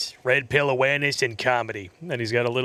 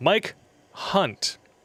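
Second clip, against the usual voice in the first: slow, pitched-up enunciation, each word cleanly separated; 6 semitones higher than usual. Reading out a donor name on YouTube: slowly enunciated 'Mike Hunt'. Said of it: "I enunciated that instead of reading it really fast".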